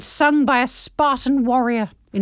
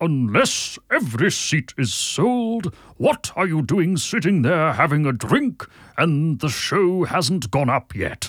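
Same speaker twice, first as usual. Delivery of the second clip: put-on old wizard voice; 8 semitones lower than usual. Speaker reading a passage aloud on request, Gandalf voice. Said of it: "Do Gandalf".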